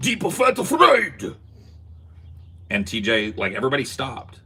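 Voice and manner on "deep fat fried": put-on thick Japanese accent, very high and loud. Acting like a stomping sumo wrestler while naming something, thick Japanese accent. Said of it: "in a thick Japanese accent".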